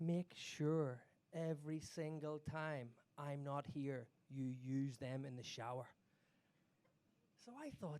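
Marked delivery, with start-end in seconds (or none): 0.0-5.9 low, slow, aggressive yet sexy half-whisper. Retelling how the woman who gave the speaker a birthday gift half-whispered in their ear, in an aggressive, sexy half-whisper. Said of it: "She whispers in my ear in this sort of like aggressive but yet sexy voice".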